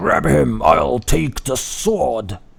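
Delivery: ragged, rough, loud werewolf shout. Game master voicing a werewolf during a fight, werewolf shouting. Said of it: "one of the other werewolves shouts".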